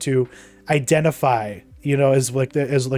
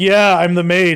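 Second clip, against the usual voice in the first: loud, all-out sarcastic tone; 4 semitones higher, 5 dB louder than usual. Retelling a show character's answer to another character: imitating a sarcastic reply. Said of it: "all sarcastically".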